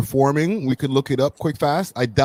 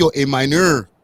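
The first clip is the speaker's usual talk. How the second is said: put-on Quebecois French accent. Showing how people in Montreal would say it: Quebecois accent. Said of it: "not even a French accent, a Quebecois accent".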